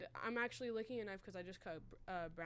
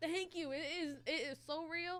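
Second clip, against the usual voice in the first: put-on Southern Texas accent, pitched up; 8 semitones higher, 4 dB louder than usual. Retelling answering people who liked the accent, in a texas voice. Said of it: "I would respond to my Texas voice".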